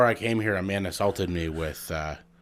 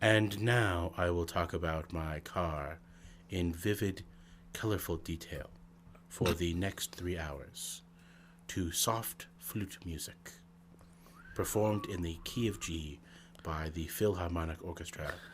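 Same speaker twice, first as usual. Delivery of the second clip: hushed, whispery, low public-radio drone; 9 dB quieter than usual. Mocking how radio announcers talk: mock NPR voice, low and whispery. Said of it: "talking like this with a low, whispery voice".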